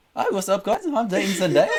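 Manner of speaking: very high, loud, animated, chatty, swinging pitch. Doing an impression on request after being asked to do his voice: Tom Holland impression. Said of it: "I don't have a Holland prepared".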